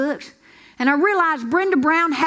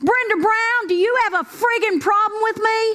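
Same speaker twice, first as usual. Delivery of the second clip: loud, high-pitched yell carrying across a room; 6 semitones higher than usual. Retelling a father's instructions to yell at a classmate: imitating a loud yell. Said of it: "in the loudest voice you have, I want you to yell".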